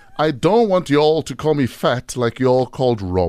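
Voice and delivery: ordinary talk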